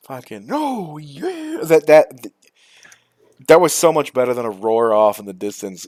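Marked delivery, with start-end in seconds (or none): 0.5-1.6 "oh yeah" said very high-pitched. Imitating a modded dragon from the game: Randy Savage voice. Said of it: "the Randy Savage dragons".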